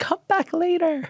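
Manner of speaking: put-on refined, elegant upper-crust accent, pitched very high. Retelling what Georgina told a film crew: Georgina's posh, elegant accent. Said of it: "in the most posh, elegant accent".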